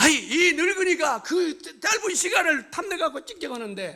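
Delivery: put-on angry yelling.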